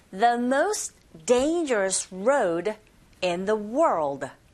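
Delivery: very slow, careful reading of the phrase. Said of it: "고고 리스닝 쓰리".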